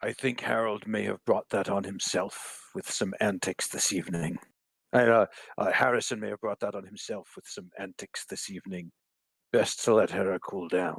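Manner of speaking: hushed, confidential whisper spoken as an aside. Leaning over to a party member after a punch: whispering in character. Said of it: "I'm just gonna whisper".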